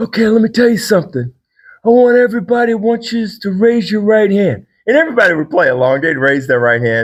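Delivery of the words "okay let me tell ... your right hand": tough-talking mafia boss voice, pitched up. Standing at a lectern before a group, doing a mob boss impersonation. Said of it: "my best impersonation of a mob boss".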